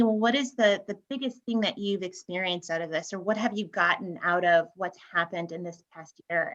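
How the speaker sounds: ordinary talk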